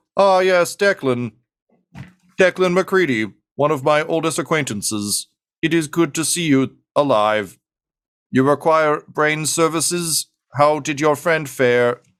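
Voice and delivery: mechanical synthesized robot voice. Voicing a mechanical character greeting an old acquaintance: robotic synth voice. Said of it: "robo synth voices".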